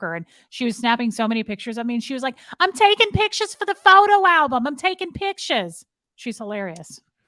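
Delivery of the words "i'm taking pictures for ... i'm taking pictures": put-on very high, soprano-pitched New York accent. Describing a woman from their chat who protested with them, Sandy McKenna impression, New York accent. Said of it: "she talks like this. She's super like she's a New Yorker".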